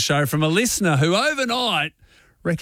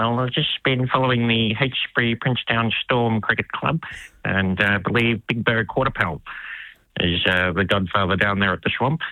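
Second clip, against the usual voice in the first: very low, deep commentator-style voice; 7 semitones lower than usual. Asked what else has been happening, answer as Richie, in a Richie impression. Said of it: "What else has been happening, Richie?".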